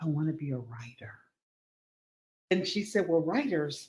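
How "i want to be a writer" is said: put-on close whisper. Asked at the cash register what they want in life, speaker retells a whisper. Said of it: "I got up close and whispered".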